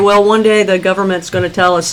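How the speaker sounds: plain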